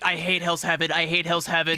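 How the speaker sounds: put-on caster voice, complaining tone. Retelling how Bros complained on a tournament broadcast, imitating Bros complaining. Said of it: "Bros is on Cherry Tournament's just like".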